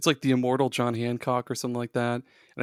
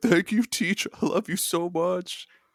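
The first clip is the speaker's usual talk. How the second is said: high, mock sobbing, weepy and grateful; 6 semitones higher than usual. Acting out graduating students thanking their teacher, imitating someone crying. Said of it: "they're crying like".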